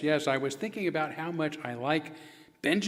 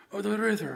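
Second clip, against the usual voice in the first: cartoon storybook bear puppet voice; 4 semitones higher than usual. Voicing the dummy explaining how the river carried him here: Winnie the Pooh voice. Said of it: "my friend Winnie the Pooh".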